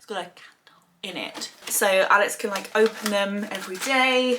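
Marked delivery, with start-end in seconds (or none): 0.0-1.5 barely-there, very quiet hushed whisper. Describing box number six while Alex is next door: whispered. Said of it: "I'm gonna whisper this because Alex is next door".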